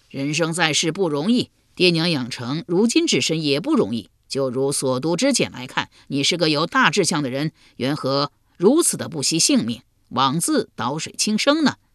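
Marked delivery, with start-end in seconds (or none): none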